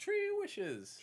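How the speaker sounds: very high, loud put-on leprechaun accent. Explaining the beer's name as a leprechaun would say it: leprechaun accent. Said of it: "In a leprechaun accent".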